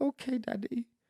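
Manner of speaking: very high, tiny, heartbroken voice. Retelling his child's reply at the grandparents' house, imitating a heartbreaking little voice. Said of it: "in this heartbreaking little voice".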